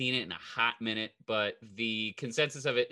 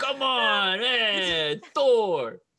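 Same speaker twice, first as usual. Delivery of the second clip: mock West Hollywood voice, higher and louder; 9 semitones higher, 6 dB louder than usual. Joking about Thor in West Hollywood, imitating West Hollywood locals. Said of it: "That's what people sound like in West Hollywood".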